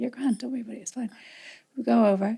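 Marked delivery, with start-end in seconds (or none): 0.0-1.1 mock-soothing patronizing tone, much quieter. Speaker retelling how a man kept reassuring her, mock-soothing, patronizing reassurance. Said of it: "Like as if I was some sort of fucking nana".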